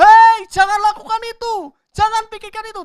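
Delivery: loud high-pitched shouting.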